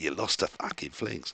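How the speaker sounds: put-on Australian accent in a breathy whisper. Mocking halfling coaches after losing a game: Australian accent. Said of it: "I shouldn't do the Australian accent".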